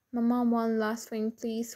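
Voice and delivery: plain reading voice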